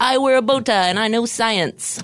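put-on high-pitched, old-timey man's voice. Showing the others a voice compared to Bill Nye. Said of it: "Like Bill Nye or something".

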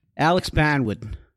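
high-pitched, loud Boston accent. On request, saying a name in a boston accent. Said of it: "Can you say Alex Barnwood in a Boston accent?".

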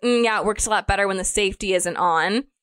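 ordinary talk

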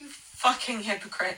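strangled, choked voice while sleep-talking. Old recording of the speaker talking in their sleep, strangled sleep-talking. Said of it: "I sound strangled".

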